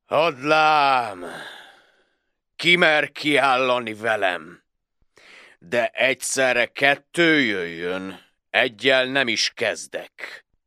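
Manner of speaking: haughty, very proud, boastful delivery. A huge giant steps out of the castle gate and challenges the Hungarians; very proud. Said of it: "s mondja nagy büszkén".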